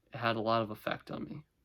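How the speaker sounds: very deadpan, dry, level, hushed delivery. After a failed attempt at gravitas, speaker carries on: very deadpan. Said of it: "very, very deadpan".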